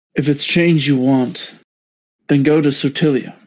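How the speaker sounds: deep put-on character voice. Voicing Nenanji answering the group: Nenanji's deep voice. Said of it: "What happened to your voice?".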